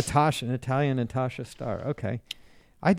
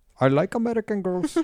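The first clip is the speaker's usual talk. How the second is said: put-on Indian accent, laid on, pitched up; 8 semitones higher than usual. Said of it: "Now I'm doing Eng-, uh, Brit-, uh, Indian".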